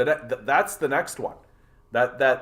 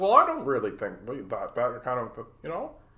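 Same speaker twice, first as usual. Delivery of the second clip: low, throaty voice with swooping pitch; 3 dB quieter than usual. Showing how Peterson sounds when talking lower: Jordan Peterson impression, lower voice. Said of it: "he does talk a little bit more down like this".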